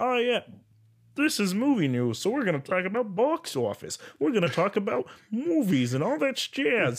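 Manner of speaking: very high, sing-song delivery. Imitating podcasts that only cover movie news, in a Kermit voice. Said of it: "Is that Kermit?".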